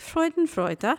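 German-Swedish accented speech. Saying a German word for fun: mock German-Swedish accent. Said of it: "in a Germany, Swedish kind of way".

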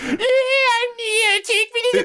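loud, very high, obnoxious put-on female voice. Imitate the voice he wanted to sound as obnoxious as possible, in a mock-obnoxious put-on voice. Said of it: "sound as obnoxious as humanly possible".

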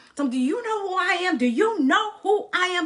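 huge, thunderous, booming, taunting giant voice. Telling of a giant taunting them day after day for forty days: thunderous giant's taunt. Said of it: "this thunderous voice that he had".

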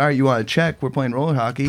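normal talking voice

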